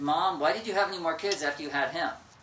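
loud shouting.

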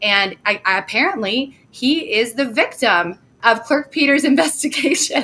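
words with laughter stifled mid-sentence. Reading out who is named as victim in an affidavit, holding back a laugh. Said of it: "I'm trying not to laugh".

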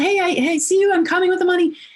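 high-pitched, fast yell. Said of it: "I yelled".

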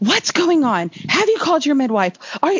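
put-on yelling in a high pitch. Recounting going into labor as her mom comes in: imitating mom yelling. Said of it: "she's just like yelling at me".

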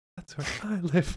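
put-on hero voice, whispering. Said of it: "He whispers".

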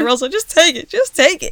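high, crying, pleading through tears. Retelling falling off a scooter, imitating own past crying plea. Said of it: "I'm crying".

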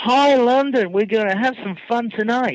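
put-on American talk-show accent mixed with Liverpool accent. Retelling a showman greeting a London crowd on stage, [name]'s awful American-Liverpool accent. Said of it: "somewhere between an American talk show and Liverpool".

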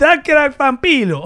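very high, very loud, belted Brooklyn accent. Trying out a voice with a sound effect, the speaker does Dracula with a Brooklyn accent. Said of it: "You sound like you're selling pizza in Brooklyn".

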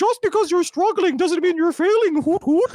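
squeaky voice, sweet yet ominous. Showing the kind of videos they'll make, doing the Owl House character voice. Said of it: "there's a character in Owl House whose voice I can do".

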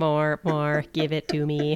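put-on robot voice. Asked to say the character's line in the robot voice: Henry Fondle robot voice. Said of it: "can you do it in the robot voice".

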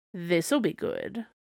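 bone-dry remark. The narrator reads the cat's reply to Kai, in a dry voice. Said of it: "said the cat in a dry voice".

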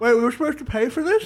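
high-pitched, spoken around a mouthful of food. Voicing a character with cake in her mouth: mouth full of cake. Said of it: "With a piece of cake still in her mouth".

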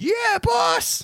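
very high, victorious, triumphant shouted yell. Voicing the whole family answering their boss: triumphant yell. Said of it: "triumphantly, uh, yell".

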